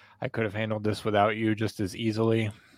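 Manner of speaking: plain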